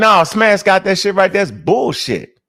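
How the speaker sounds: ordinary talk, nothing marked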